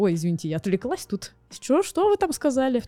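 mock-polite, needling, passive-aggressive tone. Showing how passive aggression can sound in a group: passive-aggressive tone. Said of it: "пассивная агрессия может выражаться, например, так".

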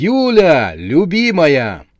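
abrupt high swooping shout, one word drawn out. Max, answering his wife's surprised look, calls out to her with a sudden yell. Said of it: "вдруг заорал".

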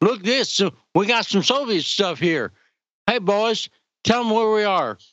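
put-on, cliched Southern American accent. Retelling a video of an American fighting in Ukraine: imitating a Southern American accent. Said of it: "Southern accents".

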